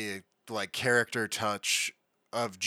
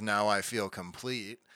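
put-on sarcastic cartoon voice. Retelling a cartoon scene, quoting Squidward: imitating Squidward's sarcasm. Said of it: "Squidward sarcastically says".

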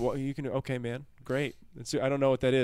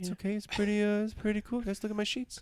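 put-on awkward voice, much higher, quieter; 7 semitones higher, 7 dB quieter than usual. Friends recalling a classmate, one imitates how he talked: quietly awkward. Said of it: "He was just like super quietly awkward".

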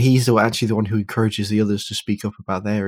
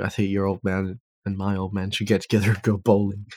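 plain

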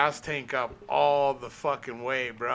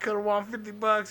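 put-on sad old man voice, higher pitch; 8 semitones higher than usual. Retelling an old guy's reaction, the speaker imitates him sounding sad. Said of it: "He's all sad".

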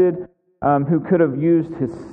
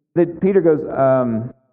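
plain

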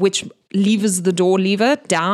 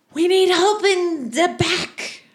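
very high-pitched yelling; 11 semitones higher than usual. Game master voicing Stefan as the temple doors burst open, Stefan shouting for help. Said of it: "And he shouts".

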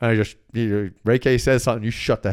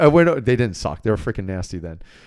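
normal talking voice

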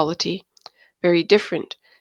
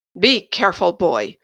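menacing, threatening tone. Narrator reads Hughes answering the aghast younger prince, threatening. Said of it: "Hughes threatened".

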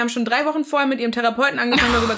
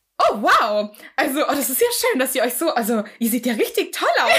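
caught off guard, completely surprised, gushing. Retelling what the woman at reception said on arrival for speed dating, acting out complete surprise.

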